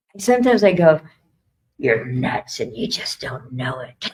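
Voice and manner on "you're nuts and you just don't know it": acted, very low, judgmental inner voice. A speaker acts out their own self-doubt in a mock-judgy self-doubt voice. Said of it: "That's a very interesting tone of voice for self doubt, right? Kind of judgy".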